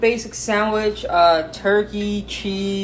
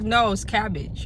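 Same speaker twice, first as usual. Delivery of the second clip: ordinary delivery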